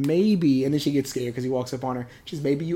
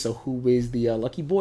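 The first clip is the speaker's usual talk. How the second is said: ordinary delivery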